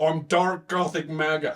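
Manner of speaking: mocking put-on tech billionaire voice. Retelling a man pointing at his hat on stage: imitating Elon Musk. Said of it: "You're a nerd".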